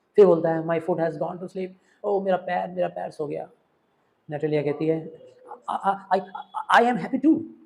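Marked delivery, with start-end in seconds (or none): 5.6-7.3 slow, halting, hesitant stammering. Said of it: "ऐसे हकला के बोल रही है".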